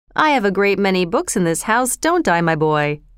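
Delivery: plain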